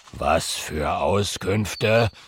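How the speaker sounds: very low, grumbling, dragon-like growl. Narrator voicing Herbert answering Oskar's request, grumbling. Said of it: "Brummt Herbert".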